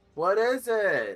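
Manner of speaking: very high shout, projected across a distance. Voicing a character calling out across a riverbank: yelling across a distance. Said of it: "Rory yells across the bank".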